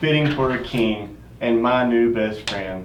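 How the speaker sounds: normal talking voice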